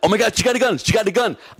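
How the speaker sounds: mock, very high, rushed, frantic panic. Retelling a friend's reaction to a gun being drawn: imitating Rivera freaking out. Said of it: "Rivera starts freaking out".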